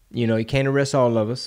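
ordinary talk

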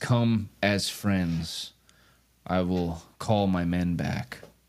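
low, distant voice carrying from far away. Voicing an unseen speaker at the end of a long hallway: voice from far away. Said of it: "sounds like it's being spoken from really far away".

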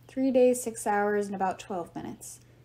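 ordinary delivery

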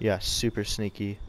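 sarcastic, mocking tone. Spotting a hidden enemy player in a game, sarcastic. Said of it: "I was being sarcastic".

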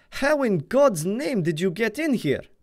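very high, shrill, loud screamed outburst. The general finds Rainsford standing in his bedroom and screams at him. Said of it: "screamed the general".

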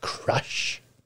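"crash" whispered under the breath. Asking whether they are getting ready for the crash, whispered 'crash'. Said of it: "I tried to whisper that then".

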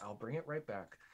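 hushed half-whisper under the breath. Retelling taking trash can lids to sled on: imitating own half-whisper. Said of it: "whisper under my breath".

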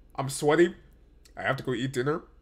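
ordinary talk

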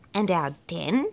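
ordinary delivery

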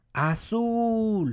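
shouted azul with loud stress on zul. Spanish stress lesson, calling the word out: call out azul, stress on zul. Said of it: "Se escucha más al final".

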